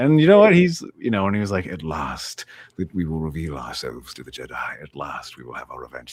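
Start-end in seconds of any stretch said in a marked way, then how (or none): 1.7-6.1 low, deep, dropped evil voice. Retelling the actor's line as the villain: evil Darth Maul voice. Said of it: "It's like a timbre to it".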